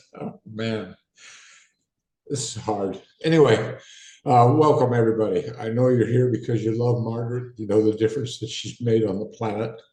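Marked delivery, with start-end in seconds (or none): 0.2-3.0 soft, slow, tearful voice, crying through the words. Starting opening remarks for people gathered for Margaret; tearful. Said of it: "I'm going to cry a little bit".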